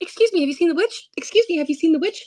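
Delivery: embarrassed, hushed, slightly high delivery. A player's character asks passers-by about the witch, in a hushed tone. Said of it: "I'm kind of in a hushed tone".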